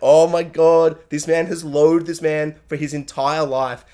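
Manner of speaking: plain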